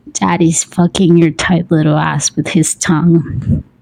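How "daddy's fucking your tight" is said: ordinary delivery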